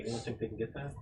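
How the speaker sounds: very quiet, barely audible, subtle, hushed murmur. Voicing a character quietly asking the group to grab the pouch: saying it quietly. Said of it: "says it really quietly".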